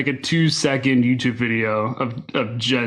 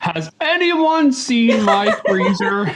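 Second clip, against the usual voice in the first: searching, puzzled, questioning tone; 9 semitones higher, 4 dB louder than usual. Mimicking how another speaker asked about a freezer: imitating someone's cadence. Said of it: "I just love the way you said it".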